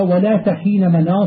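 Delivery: ordinary talk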